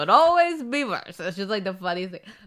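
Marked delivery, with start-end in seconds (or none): 0.0-1.2 put-on old man accent, raised and high.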